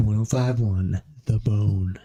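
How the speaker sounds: radio announcer voice. Showing the others how they sounded earlier on the mic, radio DJ tone. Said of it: "start getting into the radio tone".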